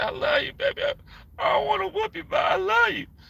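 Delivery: very high, weepy, tearful crying voice. Retelling how a mother cried before a whooping: imitating mother crying. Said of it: "She started crying. She said".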